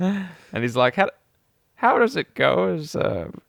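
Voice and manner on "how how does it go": put-on creaky, high old man voice. Retelling a scambaiter's character asking a scammer: imitating an old guy voice. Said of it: "makes him sound like an old guy".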